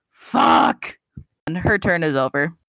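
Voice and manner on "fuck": very deep, low, shouted outburst. The game master voices Vesper after an ice knife strikes, Vesper yelling. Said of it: "Vesper just yells".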